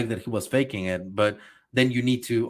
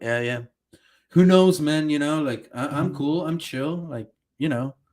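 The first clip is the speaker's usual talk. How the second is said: acted, calm, collected, laid-back, easygoing, very unbothered; 4 semitones higher than usual. Retelling a character's reply to Armin's question, mock calm and collected. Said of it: "his response is like calm and collected".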